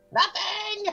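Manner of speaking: put-on defensive old woman snapping back. Voicing an old lady answering accusations while hurrying away: defensive old lady. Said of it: "an old lady walking progressively faster".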